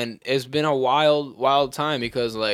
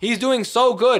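high-pitched, preachy, put-on old senator voice. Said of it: "That's Bernie".

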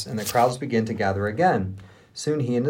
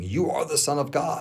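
screeching, shrieking demon voice; 3 semitones higher than usual. Reading a scripture passage aloud, voice evil spirits crying out before a healer in a shrieking demon voice. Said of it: "Loved your demon voice there".

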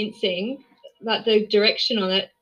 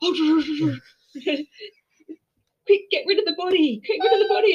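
put-on panicked creature voice, higher pitch; 6 semitones higher than usual. Retelling a scene where Zygons rush to hide a body: imitating panicking Zygons. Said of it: "I love the Zygons panicking, going".

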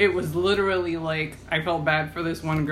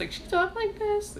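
put-on very high, mousy little girl voice. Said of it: "like, a mousy voice".

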